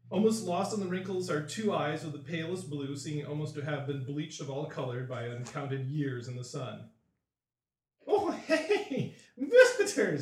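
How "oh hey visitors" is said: put-on cackling old man voice, very high and loud. The storyteller voices a wrinkled old man greeting visitors: cackling old man. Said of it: "he cackles".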